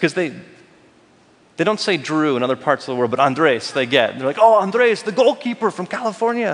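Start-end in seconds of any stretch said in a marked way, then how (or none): 4.4-6.5 vague, unplaceable put-on European accent. Retelling how fans abroad greeted him, in an unidentified European accent. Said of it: "I don't know what accent that was".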